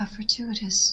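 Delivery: slow, unvoiced, breathy, hushed, under the breath.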